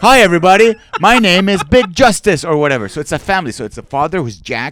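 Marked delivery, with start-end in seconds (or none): 0.0-2.4 booming, loud, high-pitched TV host voice. Retelling a late night tv show, imitating a guy talking to camera. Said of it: "he just talks to the camera like this".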